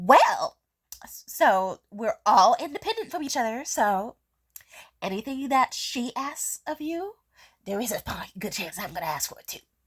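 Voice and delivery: acted, annoying, condescending voice heavy with subtext. Retelling what a woman said after cutting in: imitating an annoying subtext voice. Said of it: "she has that annoying ass subtext voice".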